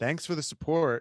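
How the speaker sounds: dry, flat, expressionless deadpan delivery. Retelling a reply to someone's cheer: imitating a deadpan delivery. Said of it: "he said it in this amazing deadpan".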